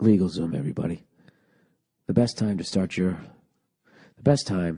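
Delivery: very low, soft, relaxed, laid-back reading. The speaker retries reading a LegalZoom ad, going for a relaxed read. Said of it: "read this a little more relaxed".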